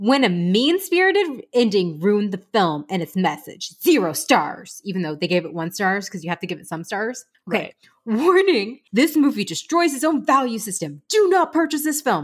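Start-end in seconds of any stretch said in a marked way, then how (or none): 8.2-12.3 emphatic, acted-out, all-caps delivery. Reading out a movie review's warning, in an all-caps voice. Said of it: "That's my all in caps voice".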